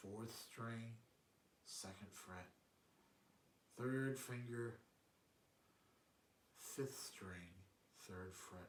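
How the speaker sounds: really slow, soft, deliberate step-by-step delivery. Calling out guitar fingerings so the learner has a chance: really slow. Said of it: "I'm going really slow".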